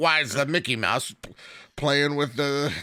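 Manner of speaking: put-on grumpy old man voice. Joking about being the old grouch who doesn't get the fans: put-on grumpy old man voice. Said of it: "I am the old man that's a grouch".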